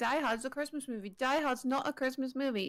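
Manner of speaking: usual speaking voice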